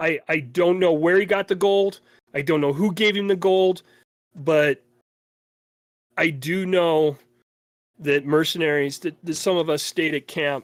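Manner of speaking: tearful, sobbing, crying through every word. A storyteller voicing a man under questioning who breaks down, crying while talking. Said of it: "And the guy just starts crying".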